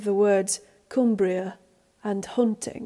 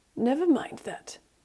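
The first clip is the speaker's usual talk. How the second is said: testy, irritable, irritated tone, higher pitch; 5 semitones higher, 4 dB quieter than usual. Norrell brushes off Childermas's remarks, irritably. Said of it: "he says irritably".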